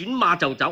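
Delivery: plain reading voice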